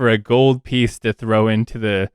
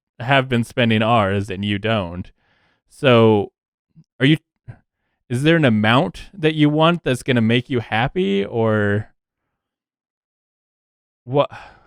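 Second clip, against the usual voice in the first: plain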